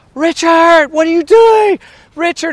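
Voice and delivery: high-pitched screaming. Speaker retells screaming at the driver as they headed into a fire: retelling a scream. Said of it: "I'm screaming at him".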